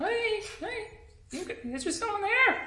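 high, soft, mysterious, luring voice calling out. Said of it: "the exact same thing Kelly just heard was".

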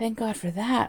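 ordinary delivery

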